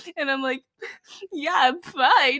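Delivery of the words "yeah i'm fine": put-on tearful voice, fighting back tears. Retelling answering worried friends after a painful fall: imitating holding back tears. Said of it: "But I'm obviously tearing up".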